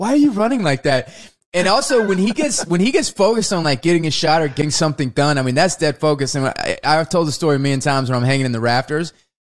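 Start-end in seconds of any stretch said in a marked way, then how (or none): 0.0-1.1 mock scornful, disdainful, disgusted, put-off tone. Retelling how Breck questions an actor's running: imitating Breck's disgusted tone. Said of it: "this disdain and just disgust in his voice".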